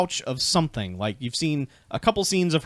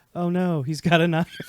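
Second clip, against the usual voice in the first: smug, smarmy, mocking sarcastic delivery; 4 semitones higher than usual. Quoting a favorite movie line back: imitating a smarmy sarcastic line. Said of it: "this smarmy, sarcastic".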